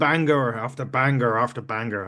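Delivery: very bad, dreadful Irish accent. Praising a talented man back from injury, quote Sheamus in a very bad Sheamus-style Irish accent. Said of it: "That's the worst Irish accent you'll ever hear".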